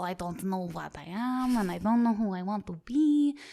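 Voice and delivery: blended American Southern and Russian accent.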